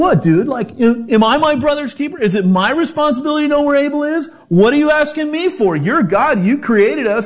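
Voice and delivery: mock tone with attitude. Speaker acting out Cain's reply to God: acting out Cain's attitude. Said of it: "sense of attitude in his voice".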